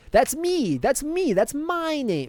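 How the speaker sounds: very high, proud, swooping sing-song, slow and drawn out. Retelling how Chris Chan insists on his own name: imitating Chris Chan. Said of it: "He's like".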